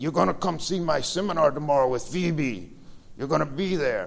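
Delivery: put-on strong, heavy Romanian accent, laid on thick. Retelling what a man who recognized him said, in a thick Romanian accent. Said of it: "in his thick Romanian accent".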